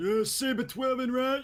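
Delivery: put-on very high, loud, broad New York accent. Imitating a friend from another community who always cracked them up: imitating William's New York accent. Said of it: "He's got the most New York accent you can imagine".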